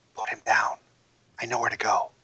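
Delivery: hushed whisper, close up. Narrating a game, voicing a character who whispers in your ear: whisper. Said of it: "she whispers in your ear".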